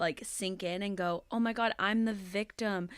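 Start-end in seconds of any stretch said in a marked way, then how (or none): none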